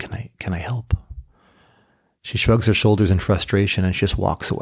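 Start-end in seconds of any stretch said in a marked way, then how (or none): 0.0-0.9 whispering, much quieter. Telling a story, a husband offers his struggling wife help: whispering. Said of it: "And he whispers".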